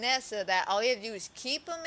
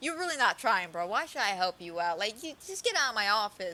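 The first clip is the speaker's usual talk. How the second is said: put-on dismissive tone and attitude. Retelling how a character acts in a job interview: imitating a dismissive tone. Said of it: "He goes off from very dismissive".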